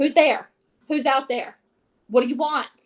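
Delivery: harsh, loud yelling in a man's voice. Reading a story, a man shouting from his door at strangers: harsh yelling man's voice. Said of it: "the harsh voice of a man yelling out".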